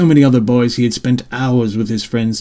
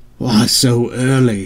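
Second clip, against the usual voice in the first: grumbling, groaning, complaining voice. A narrator reads Scott dragging his feet behind his mother on the trail, groaning. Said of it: "Scott groaned".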